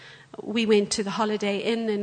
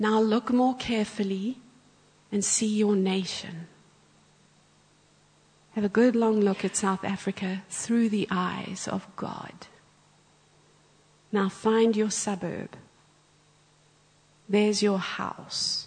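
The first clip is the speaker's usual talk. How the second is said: imitated whisper. Retelling a guided imagination exercise with eyes closed: imitating someone whispering. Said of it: "he's whispering as he speaks".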